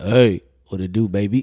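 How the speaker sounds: forced deep put-on voice, slow and loud. Retelling a phone call to a girlfriend: imitating own deeper voice. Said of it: "I used to make my voice deeper like that".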